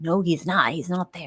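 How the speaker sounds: put-on upset tone. Retelling how their mother reacted to being told he was outside, imitating an upset mother. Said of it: "she's getting upset because she's like".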